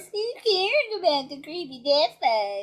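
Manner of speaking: dumb, taunting, mocking put-on voice. Quoting a favorite movie line: imitating a stupid mocking voice. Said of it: "in his stupid mocking voice".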